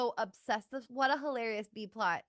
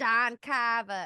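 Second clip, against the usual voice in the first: fake Massachusetts accent, louder; 4 dB louder than usual. Repeating a name on purpose after slipping: put-on Massachusetts accent. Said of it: "then I did it on purpose after that".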